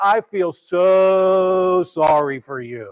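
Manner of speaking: dripping fake sympathy, sarcastic, very slow. Reacting to a rich man's storage problem: acting out sarcastic pity. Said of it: "all of us would sarcastically say".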